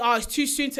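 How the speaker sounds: ordinary talk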